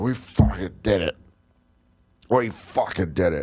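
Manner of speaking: mock drunk voice. Retelling a drunk fan in a hotel elevator: imitating a very drunk man. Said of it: "This guy's so drunk he's a zombie".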